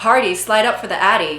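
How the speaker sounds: usual speaking voice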